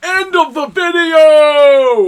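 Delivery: booming, swooping, rising, drawn-out host-style yell. Youtuber welcomes viewers back at the end of the video, yelling. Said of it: "I'm just yelling for the sake of yelling".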